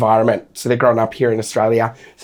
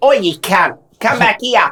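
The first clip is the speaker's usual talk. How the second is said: very high-pitched put-on Australian kid accent; 10 semitones higher than usual. Showing how kids sound after watching Bluey: imitating a Bluey Aussie accent. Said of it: "little Aussie accents with Bluey".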